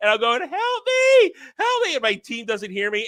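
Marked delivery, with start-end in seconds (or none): 0.4-1.9 acted, very high, drawn-out tearful crying plea. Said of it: "I'm crying hell".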